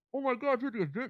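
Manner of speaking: very high voice, muffled as if through a mask. Describing a movie scene, imitating Peter Parker talking through a mask. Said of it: "you kinda hear him talk like this".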